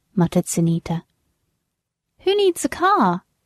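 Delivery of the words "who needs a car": insistent, demanding, pitched very high. A character answers a muttered remark about owning no car; demanding. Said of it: "demanded Sally".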